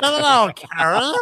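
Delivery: very high-pitched, creature-like voice. Doing a bit in Gollum's voice, greeting someone by name, Gollum voice. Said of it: "I will say it in Gollum's voice".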